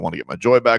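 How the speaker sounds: ordinary delivery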